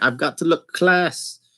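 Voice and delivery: bad Irish accent. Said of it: "That was a terrible Irish accent".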